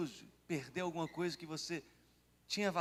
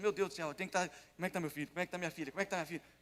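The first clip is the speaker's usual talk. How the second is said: ordinary talk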